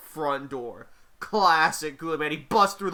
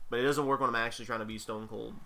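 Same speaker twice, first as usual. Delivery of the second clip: ordinary talk, nothing marked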